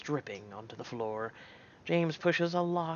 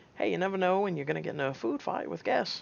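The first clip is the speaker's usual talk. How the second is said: laid-on, put-on southern American accent; 4 semitones higher than usual. Voicing a character in a story reading: put-on southern accent. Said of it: "That is my southern accent giving out way".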